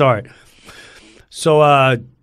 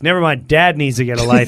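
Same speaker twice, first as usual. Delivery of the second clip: ordinary talk, nothing marked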